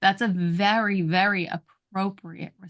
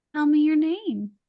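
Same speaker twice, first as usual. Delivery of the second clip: open, welcoming, inviting, pitched a bit higher; 8 semitones higher than usual. Demonstrating different ways to say the same words, the inviting version. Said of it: "The middle one".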